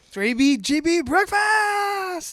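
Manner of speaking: mock very high scream, drawn out and rising. Imitating a cat video guy's sign-off, imitating a guy screaming. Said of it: "He screams breakfast".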